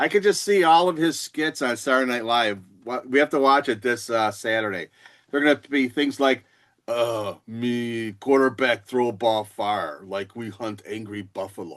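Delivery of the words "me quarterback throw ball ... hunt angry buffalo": slow, broken caveman speech. Speaker predicting Saturday Night Live skits about a quarterback, caveman voice. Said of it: "talking like a caveman".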